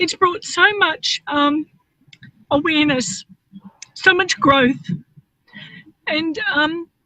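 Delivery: tearful, crying voice, speaking through tears. Speaker sharing what they're most grateful for, crying. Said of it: "I'm not crying because I'm sad. I'm crying".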